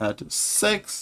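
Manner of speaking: high, soft, cracking voice.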